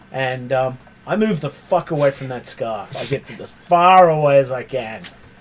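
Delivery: normal talking voice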